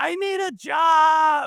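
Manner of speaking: very high, very slow, drawn-out yell, job stretched. Retelling jumping up on the kitchen counter: retelling own past yell. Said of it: "and just yelled".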